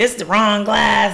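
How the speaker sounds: plain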